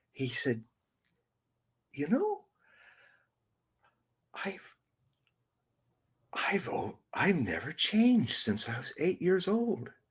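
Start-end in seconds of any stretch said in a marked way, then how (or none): 2.0-9.9 high, pitched-up, innocent little voice. Retelling an interview where Trump's face softened: imitating Trump's innocent voice. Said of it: "and his voice changed, and he became, like, a innocent".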